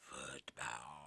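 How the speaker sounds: football said low, sarcastic.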